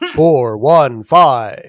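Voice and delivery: very loud, deep, booming, dramatic movie announcer voice. Giving the podcast's call-in phone number in a Moviefone voice. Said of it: "here comes my movie phone voice for you nineties lovers".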